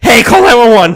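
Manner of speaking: high, urgent, panicked voice. Retelling breaking a leg and asking for nine-one-one, in a put-on panic voice. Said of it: "I'm in a panic voice right now".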